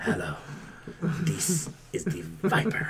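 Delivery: slow, breathy prank-call voice, breathed out. Retelling prank calls to his parents: imitating his own Viper voice. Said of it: "I would do the whole Viper thing again".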